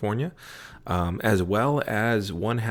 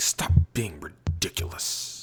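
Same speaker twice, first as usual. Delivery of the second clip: put-on little child's fed-up, grumbling complaining voice; 4 semitones lower than usual. Imitating a son scrunching up his face: imitating his son. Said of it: "he scrunches up his face like".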